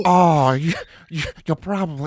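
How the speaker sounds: stammering voice cracking up into laughter mid-line. Trying a quoted line while laughing: failed Jennifer Coolidge impression, laughing. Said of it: "I can't even do Jennifer Coolidge 'cause I'm laughing".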